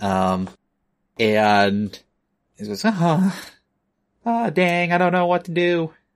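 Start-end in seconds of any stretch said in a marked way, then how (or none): 2.9-5.9 fretting, upset little gopher voice, pitched up. Voicing an upset gopher character who doesn't know what to do: voicing an upset gopher. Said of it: "looking a little, uh, nonplussed, upset".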